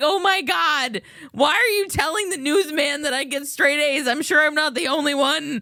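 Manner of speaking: embarrassed, cringing, mortified outburst. Retelling own embarrassed reaction to grandma bragging: retelling embarrassed thought. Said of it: "I was so embarrassed".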